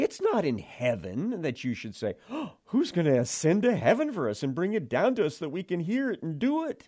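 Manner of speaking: sarcastic, tongue-in-cheek, swooping sing-song. Reading a verse from Deuteronomy aloud, sarcastic. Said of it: "so I'm trying to put sarcasm in my voice".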